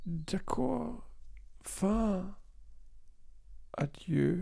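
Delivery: whispered with stiff lips. A narrator reads a man's farewell as he turns back to the window, whispered with stiff lips. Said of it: "flüsterte er mit steifen Lippen".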